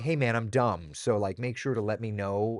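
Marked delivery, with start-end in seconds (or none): none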